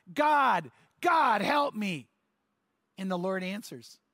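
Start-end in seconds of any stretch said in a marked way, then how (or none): 0.1-2.0 very slow, drawn-out scream. Telling a story, acting out the man's final cry to God, retelling a scream. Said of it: "he finally screams out".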